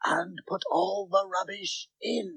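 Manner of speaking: high, soft whisper. A magician finishes the magic rhyme with the others, whispering.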